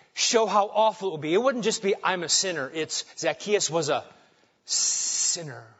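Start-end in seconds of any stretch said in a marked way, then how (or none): 3.2-5.6 slow, drawn-out, disgusted, scornful, contemptuous intonation. Showing how awful it would sound calling zacchaeus a sinner: mock-disgusted, awful intonation. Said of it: "Kind of just with that awful intonation".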